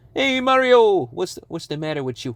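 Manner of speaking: attempted New York accent. Trying out an accent while chatting: attempted New York accent. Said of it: "Trying to get into that New York accent".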